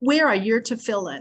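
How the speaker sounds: put-on snarky delivery. Retelling how someone challenged a woman over women's issues: mock-snarky question. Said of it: "kind of like in a snarky voice".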